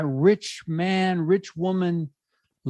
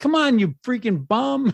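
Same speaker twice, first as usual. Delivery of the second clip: mild heckling yell, pitched up; 6 semitones higher than usual. Host on the show retells yelling at the TV during sports: retelling a yell at the TV. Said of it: "And then you're yelling at the T V".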